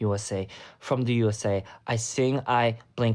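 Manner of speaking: usual speaking voice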